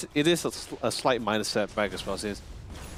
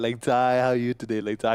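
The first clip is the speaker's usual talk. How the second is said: put-on talking in baby talk. Imitating how an auntie talks to a little kid at a candy store: imitating an auntie talking to a kid. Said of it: "or they sometimes say".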